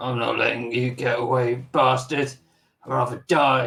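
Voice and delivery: hushed whisper under breath. A role-playing game player speaks as his character after a save, whispered under his breath. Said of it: "he whispers under his breath".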